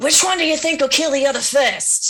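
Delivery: botched whisper, loud and high-pitched. Player's character asks a question, meaning to whisper: failed whisper, actually loud. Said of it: "I think I'm whispering, but I'm not".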